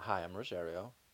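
flat, toneless, lifeless, quiet delivery. Practicing his introduction for a partner, the speaker says it in a dead-sounding voice. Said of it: "You sound dead".

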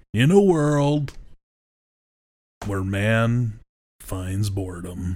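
dramatic movie trailer announcer voice. Imagining a movie trailer made from the sermon: movie trailer voice. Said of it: "Could you imagine trailers with that?".

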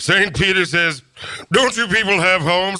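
very high, spot-on character voice. Doing an impression for a guest who knew Ted Knight: Ted Knight impression. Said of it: "a dead-on Ted Knight impersonation".

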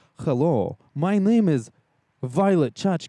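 Russian accent, very slow and deliberate. Guessing how a Russian-accented diva would sound, in a put-on Russian accent. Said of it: "I would assume it sounds something like this".

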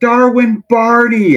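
loud, very high, full-volume yell. Recounting how his son called out to a ballplayer, retelling a shout as loud as possible. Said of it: "as loud as he could".

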